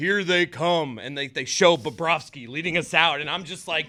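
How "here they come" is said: stadium hype-man announcer voice. Speaker recalling the team's entrance, imitating the deep intro announcer voice. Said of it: "it's like that deep voice. It's like their intro voice guy".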